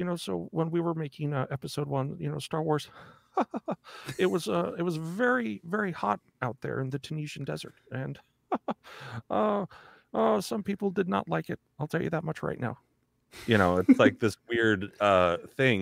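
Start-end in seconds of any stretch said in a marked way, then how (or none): 0.0-12.8 put-on voice with chuckles, higher and quieter. Imitating a filmmaker retelling a shoot: George Lucas impression with little laugh. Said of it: "this weird little laugh, like, he'll be like".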